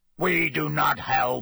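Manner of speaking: harsh, rough, croaking creature voice. Narrator voicing the merman's reply to Harry in a harsh, croaky voice. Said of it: "he said in a harsh, croaky voice".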